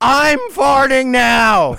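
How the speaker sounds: high-pitched, loud, slow yelling. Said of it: "while yelling".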